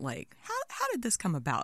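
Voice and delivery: put-on heavy Southern Georgia accent. Retelling her reaction while being told about their work, in a heavy southern georgia accent. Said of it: "imagine a very heavy Southern Georgia accent".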